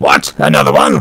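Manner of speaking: put-on very posh, laid-on upper-crust British accent. Retelling a scene where one Dalek answers another, use a posh British Dalek voice. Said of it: "a very uh, posh uh, British accent".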